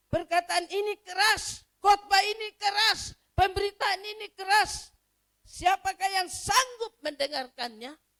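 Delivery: complaining tone, high-pitched and loud.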